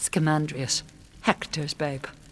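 plain

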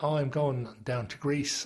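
ordinary talk

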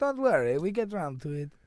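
loud put-on Italian accent. Imitating the Italians during a chat about accents; put-on Italian accent. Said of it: "it's like the Italians".

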